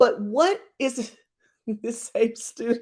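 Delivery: words broken up by laughter. Telling a story about a student and his laptops, laughing while talking. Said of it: "I'm sorry, I'm laughing".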